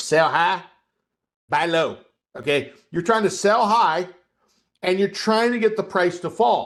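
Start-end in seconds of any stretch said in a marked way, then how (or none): 0.0-2.0 Southern accent, slower. Speaker has everyone repeat a trading rule in a Southern accent. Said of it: "say this on the Southern accent".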